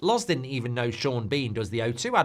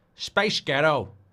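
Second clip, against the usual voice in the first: put-on American-accented delivery; 2 semitones higher than usual. Speaker tries the phrase in an american accent.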